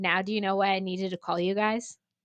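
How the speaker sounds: ordinary talk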